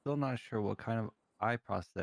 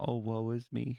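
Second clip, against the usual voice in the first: mock self-pitying, woe-is-me tone. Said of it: "I'm just going".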